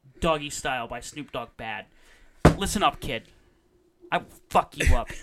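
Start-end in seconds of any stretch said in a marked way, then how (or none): 2.6-5.1 loud, mad, fired-up angry voice. Threatening someone who called an album bad: angry. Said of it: "I'm really mad right now".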